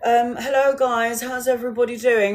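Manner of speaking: put-on elderly lady's voice. Retelling how a two-year-old girl greeted people, imitating an old woman's voice. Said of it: "sounded like a fucking old woman".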